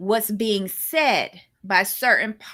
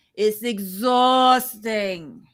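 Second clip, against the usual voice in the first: full, thick Brooklyn accent. Speaker complaining about how the episode's clips are edited, full brooklyn accent. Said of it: "Said in all of my Brooklyn accent".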